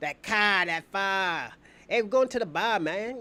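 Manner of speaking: stock Boston accent. Speaker demonstrating the accent people think boston has, in a boston accent. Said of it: "they got that accent".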